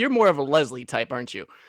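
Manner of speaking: mocking, dry, sarcastic put-down. Taunting a dragonborn at a tavern table in character: sarcastic in character. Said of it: "my character is straight sarcastic the entire time".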